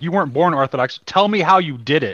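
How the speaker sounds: earnest, heartfelt pleading tone. Quoting a man asking someone not born Orthodox how he did it, imitating an earnest plea. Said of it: "he really meant that question from the depth of his being".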